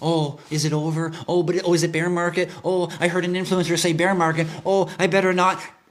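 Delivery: frightened, scared, nervous, dithering, second-guessing voice. Mocking people who panic when the market crashes: imitating scared nervous investors. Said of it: "scared, nervous".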